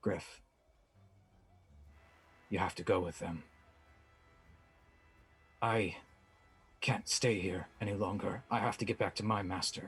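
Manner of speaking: kindly, gentle, careful tone. In a tabletop game, one character speaks to another, gently. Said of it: "Toldir just says gently to him".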